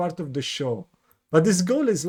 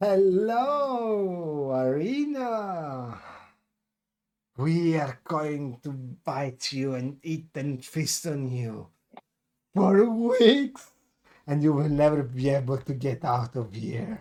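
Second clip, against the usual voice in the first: slow, menacing, gloating ghoul voice, "hello" stretched; 2 semitones lower than usual. Game master voicing the ghoul masterminds coming in to threaten Arena, menacing ghoul voice. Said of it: "But it's kind of shattered after a moment because you see the masterminds from these creatures coming in".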